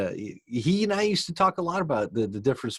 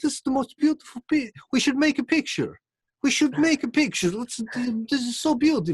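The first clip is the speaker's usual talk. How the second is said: put-on very high-pitched, gushing Ukrainian accent; 13 semitones higher than usual. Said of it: "And that accent I ended up using".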